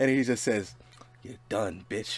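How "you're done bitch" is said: whispered, offhand, throwaway menacing tone. Retelling what a man said after hanging up: imitating a casual menacing line. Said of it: "he says it like it's so little".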